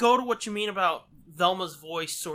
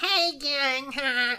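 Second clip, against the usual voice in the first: strongly exaggerated, pitched-up nerdy voice; 8 semitones higher than usual. Describing how an actress played Velma: nerdy Velma voice. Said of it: "She really leaned into this sort of like".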